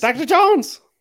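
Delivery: very loud, high-pitched yelling call. Quoting a line as Short Round: Short Round impression. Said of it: "that's a great impression".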